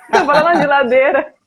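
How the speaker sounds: loud, laughing all through the words.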